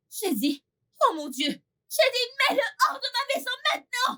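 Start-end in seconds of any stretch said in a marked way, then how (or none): 1.5-4.2 very high, escalating, furious rising yell. Ordering a servant to put someone out of the house: angry shouting. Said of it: "calmez-vous, s'il vous plaît".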